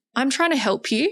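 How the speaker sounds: calm, acted-out words. Retelling answering a man who yelled in front of everyone: retelling a calm reply. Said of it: "said in front of everyone really calmly".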